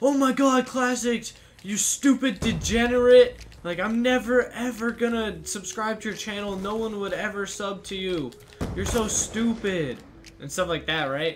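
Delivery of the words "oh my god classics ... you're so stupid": mock furious child's yelling rant, shrill. Retelling how a kid yelled at the speaker after a shot: retelling an angry yell. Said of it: "he starts yelling, he's like".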